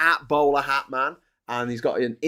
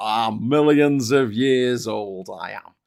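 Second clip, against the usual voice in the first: put-on Yorkshire accent, drawled very slowly, drawn right out; 3 dB louder than usual. Joking with a co-speaker about how a character talks, Yorkshire-accent Galactus voice. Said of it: "a Yorkshire accent".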